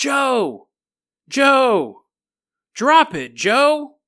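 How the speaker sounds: eerie, high ghostly voice calling out, drawn out. Telling a story, the speaker voices a ghost warning Joe: ghostly voice. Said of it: "The ghost voice goes".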